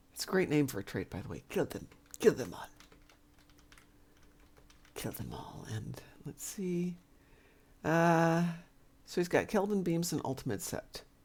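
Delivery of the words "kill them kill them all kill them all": menacing, hushed, sinister whisper. Reading out a trait's name the way it should be said: sinister voice. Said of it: "you do need to say it in the sinister voice".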